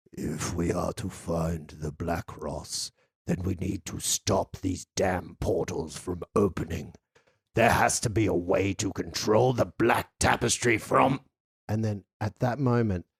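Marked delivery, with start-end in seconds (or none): 0.2-11.2 teeth-jarring, low, deep rumble from deep down. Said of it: "A deep and rumbling voice that sets your very teeth on edge".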